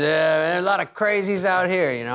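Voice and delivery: tough-guy manner. Retelling what a Vegas driver said: imitating a tough-guy driver. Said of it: "sort of a Guido type of, you know, tough guy".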